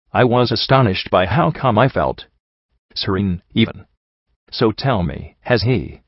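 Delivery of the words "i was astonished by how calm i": usual speaking voice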